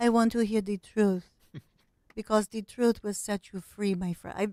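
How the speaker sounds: fond, affectionate, loving delivery. Imitating the way she speaks after praising it: Melania Trump impression. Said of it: "I also love the way she speaks".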